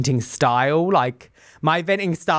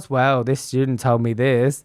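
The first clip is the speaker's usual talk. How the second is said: put-on gloomy donkey voice; 3 semitones lower than usual. Imitating a sorrowful coworker at lunch: gloomy Eeyore voice. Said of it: "a little Eeyore in the room".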